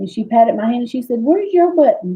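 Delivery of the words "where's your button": sweet, doting, tender, high nurse's voice. Retelling what a woman said while holding her hand, imitating how she talked. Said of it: "I'm just gonna talk like she talked".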